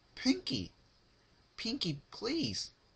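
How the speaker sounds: very high, shrill, tearful, terrified pleading tone.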